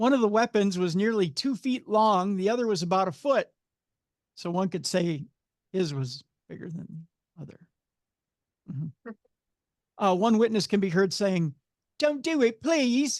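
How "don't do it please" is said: put-on high, slow little child's English accent. Quoting a witness from a news story: little child English accent. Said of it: "I love your your little child English accent".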